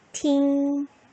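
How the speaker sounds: 팅 held flat and high, first tone. Tone lesson, combining sounds into a syllable: first tone on '팅'. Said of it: "제일 성의 소리를 내면 어떻게 된다?".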